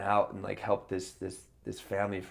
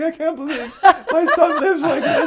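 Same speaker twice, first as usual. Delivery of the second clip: mock tearful crying woman voice, higher, louder; 17 dB louder than usual. Retelling a visit when his mom saw his messy apartment: imitating his mom crying. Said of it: "She comes in and just starts crying".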